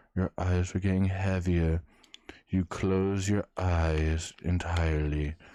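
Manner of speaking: calm, mesmerizing, soothing, lulling hypnotist voice. Pretending to hypnotize a listener, soothing, lulling voice. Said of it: "Listen to my soothing voice".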